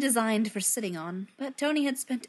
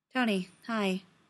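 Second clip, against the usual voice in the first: dead-level monotone with no inflection. A narrator reads one character greeting another, flat, no inflection. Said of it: "with no inflection in his voice at all".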